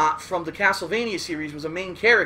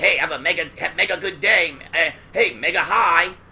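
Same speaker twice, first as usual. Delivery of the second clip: weird cartoon hero voice; 2 semitones lower than usual. Imitating how Mega Man talked on the show, Mega Man voice. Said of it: "he would talk like this".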